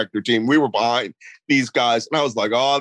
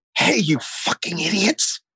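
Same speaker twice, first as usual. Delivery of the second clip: high, hushed stage whisper; 5 semitones higher than usual. Retelling calling up to snipers on a roof: retelling a whisper. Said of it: "so I whisper".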